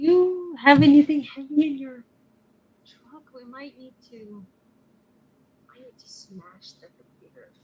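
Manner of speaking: very hushed half-whisper. Half-whispering to a party member about smashing a computer: half-whispering in character. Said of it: "kinda whisper in her ear".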